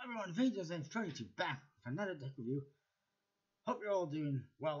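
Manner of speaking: slightly out of breath, pitched slightly up. A tech reviewer greets viewers after running around, a little out of breath. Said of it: "I'm a little bit out of breath".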